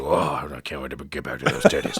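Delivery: very low, deep grunting voice. Retelling a movie scene of a man leaving: Tim Taylor grunt. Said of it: "a little Tim Taylor grunt".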